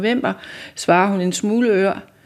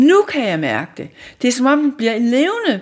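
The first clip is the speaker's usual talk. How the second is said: captivated, spellbound, rapt outburst with swooping pitch; 4 semitones higher than usual. Narrator voicing a woman feeling warmth flow from a sculpture: enthralled exclamation. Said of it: "udbryder hun betaget".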